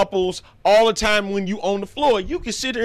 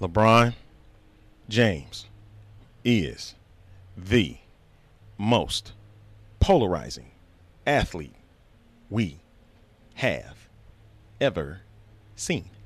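very slow, low, halting, word-by-word emphasis; 14 semitones lower, 5 dB quieter than usual. Speaker repeats his claim so everybody can hear and understand, with very slow delivery. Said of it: "I'm gonna say it really, really slow".

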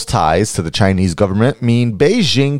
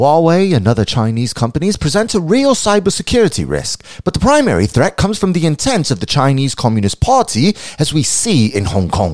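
badly done, fake put-on British accent; 4 semitones higher than usual. Quoting a former GCHQ head in a news story, the speaker uses a bad British accent. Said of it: "Go ahead and cancel me for that terrible accent".

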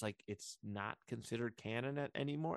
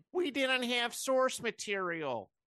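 very high, slow, raised pronouncement; 12 semitones higher, 7 dB louder than usual. Mocking a film franchise's handling of source material: Kathleen Kennedy impression. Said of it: "that was my Kathleen Kennedy impression".

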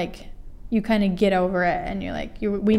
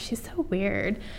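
hushed, half-whispered aside; 6 dB quieter than usual. Retelling what girls in a freshman writing class half-whispered, imitating girls half-whispering.

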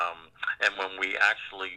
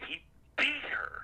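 put-on cracking emotional voice, higher and quieter; 7 dB quieter than usual. Retelling a prosecutor pointing at the defendant: imitating an emotional voice cracking. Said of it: "'cause his voice cracked at the top of it".

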